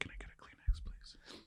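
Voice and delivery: slow, hushed, drawn-out whisper. Asking another speaker for a kleenex: whispering. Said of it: "Why are you whispering?".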